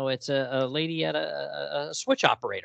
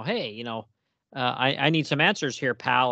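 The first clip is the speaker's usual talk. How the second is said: normal talking voice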